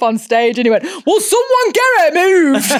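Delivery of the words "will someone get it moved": put-on Wigan accent breaking through, very high pitch. Retelling a tribute act dropping his American accent: imitating a Wigan accent. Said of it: "he had the American accent until".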